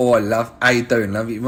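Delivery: put-on Cockney accent. Speaker showing off the accents he can do, in a cockney accent.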